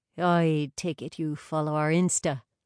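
ordinary delivery

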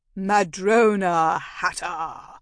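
deep, loud villainous half-cackle, voice deepened. Asked by the detective to state her full name, she answers: deep villainous half-cackle. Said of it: "I deepened my voice to a villainous half-cackle".

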